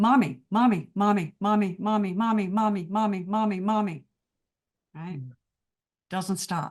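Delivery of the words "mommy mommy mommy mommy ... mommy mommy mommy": mock two-year-old voice. Explaining the body's insistent voice, imitating a two-year-old. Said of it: "It's like the two-year-old".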